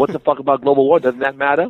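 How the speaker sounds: heated, indignant, angry yelling. Retelling what an angry vegan friend yells about global warming: imitating Simone Reyes yelling angrily. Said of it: "She's yelling in the background".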